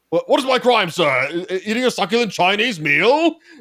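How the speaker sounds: put-on loud, high-pitched old man voice. Quoting a viral video of an arrest: imitating old man from viral arrest video. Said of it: "old viral video of the old dude getting arrested".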